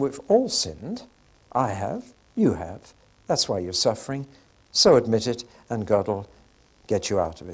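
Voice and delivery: mild, tender, very gentle and kindly tone. Retelling the words spoken to Job, imitating Eliphaz speaking gently. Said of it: "Very gentle".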